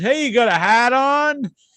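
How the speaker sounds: accent dropping r sounds. Explaining how locals drop their R's, showing a line to friends: local R-dropping accent. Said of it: "people in the area they don't pronounce the R's".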